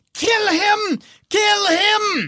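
shrill, very high, very slow, drawn-out scream. Voicing a character who screams at a creature to attack: Ludmilla screaming. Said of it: "Ludmilla screams".

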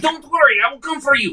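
quick, high, rushed and rattled off. As a box sucks a character in, a player's character calls out, said real quickly. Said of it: "I say real quickly".

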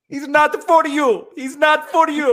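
very high, loud, belted fortune-teller-style voice. Joking about being a fortune teller from old commercials: Miss Cleo impression. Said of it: "Did Miss Cleo suddenly become Mario?".

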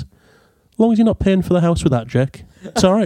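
put-on matter-of-fact, straight-faced, nonjudgmental delivery. Retelling the mother's reply in the pub: imitating her straight-faced delivery. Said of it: "completely straight-faced".

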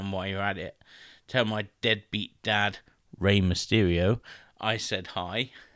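ordinary talk, nothing marked

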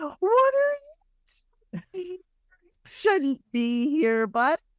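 put-on very high, swooping, sing-song baby talk. Acting out Briar talking to a plant not native to the area, in Briar's baby talk. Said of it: "Like the baby talk at the plant".

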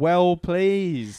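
put-on high-pitched Cockney accent. The speaker plays God's voice, doing God in a cockney accent. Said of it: "Do you think he was actually a bit of a cockney?".

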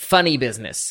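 normal talking voice

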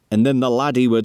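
plain

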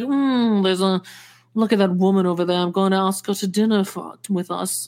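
mock drunk man's voice. Retelling what a drunk man going through a divorce said: imitating a drunk man. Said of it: "And then he's like".

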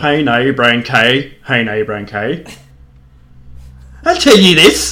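low, put-on Irish Cork accent with full lilt. Demonstrating a get-in phrase for an accent, in a cork accent. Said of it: "He's in Cork again".

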